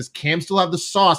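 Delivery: plain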